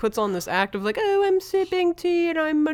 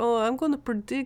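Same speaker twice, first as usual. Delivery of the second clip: put-on Jamaican accent, said more quietly; 4 dB quieter than usual. Showing how Miss Cleo talks: Miss Cleo voice. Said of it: "She's, like, Jamaican".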